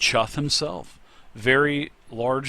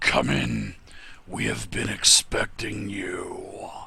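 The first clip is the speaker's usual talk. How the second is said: rumbling, very deep grumbling voice, drawn-out "you"; 3 semitones lower than usual. Narrator voicing a voice from the chamber: very deep grumbling voice. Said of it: "a very deep grumbling type of voice that said".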